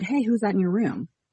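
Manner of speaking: whispered. Retelling whispering to a boyfriend in the kitchen: retelling a whisper. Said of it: "And I whispered to him".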